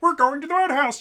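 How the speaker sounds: pitched very high and belted loudly. Speaker opening a one-shot game session, in a Kermit the Frog voice. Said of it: "I'll do my Kermit the Frog".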